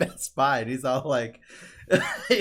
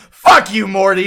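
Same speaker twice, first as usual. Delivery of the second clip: put-on very loud, drunken shouting; 5 semitones higher, 13 dB louder than usual. Retelling a shit-faced drunk recording session, imitating drunk Rick yelling. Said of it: "just yelling at his own recorder".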